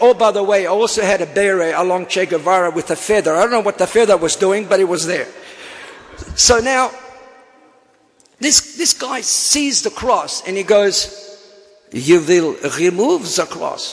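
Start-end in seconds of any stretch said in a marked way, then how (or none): 11.9-13.9 clumsy, bad put-on French accent. Retelling what a man said on seeing the speaker's cross, bad Peter Sellers French accent. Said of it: "That's a French accent".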